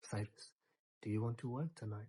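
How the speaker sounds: put-on whispering. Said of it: "whispers in my ear".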